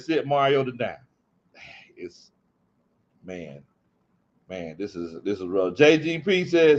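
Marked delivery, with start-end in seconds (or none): none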